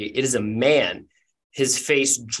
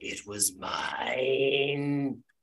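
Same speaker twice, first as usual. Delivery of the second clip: soft, ancient croaking voice with "mine" drawn out; 8 dB quieter than usual. Storyteller voices the players' old rival Jeremith calling up through pipes: ancient croaking voice. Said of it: "the ancient and croaking voice of your old rival Jeremith".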